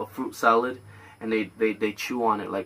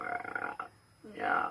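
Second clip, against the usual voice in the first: put-on ASMR voice, quieter. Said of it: "He goes like".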